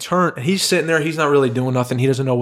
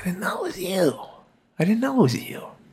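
bad put-on voice, high, soft, lilting sing-song; 7 semitones higher, 5 dB quieter than usual. Retelling a man who came over and didn't recognize him, imitating the man's voice. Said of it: "Is that the voice, really?".

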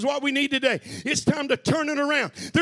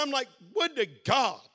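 plain

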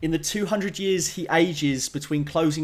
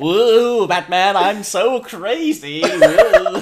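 very loud, high, slow, drawn-out belted yell; 6 semitones higher, 9 dB louder than usual. Joking about being in a bad fan film, as the Joker in a straitjacket: Joker voice. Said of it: "I'm the Joker in the straitjacket going like".

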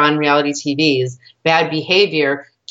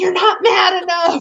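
shrill, very high, demanding yell. Describing a man yelling at scared voiceover actors, imitating someone yelling. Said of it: "he's yelling at them".

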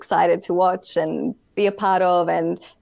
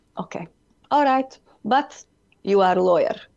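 put-on accent, spoken slower. Retelling dad's reply to a request for support; imitating dad's accent. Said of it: "that accent just instantaneously came out".

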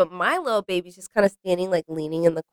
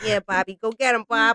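high, cheering New Jersey mom accent; 5 semitones higher than usual. Imagining sitting back and cheering someone on: new jersey mom voice. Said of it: "You'll just be sound like a New Jersey mother".

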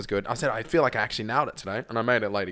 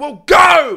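mock yell, much higher pitch and much louder; 15 dB louder than usual. Retelling mum yelling at the speaker in the bath, imitating mum yelling. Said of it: "And like yelled at me like".

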